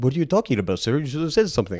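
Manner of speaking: put-on old-time engineer's accent. Retelling what engineers would say to someone silent: put-on accent. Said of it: "I don't know why I had an accent".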